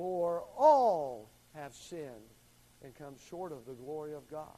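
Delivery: heavy stress on the word "all".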